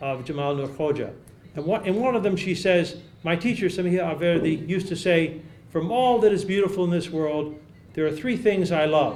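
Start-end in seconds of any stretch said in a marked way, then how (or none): none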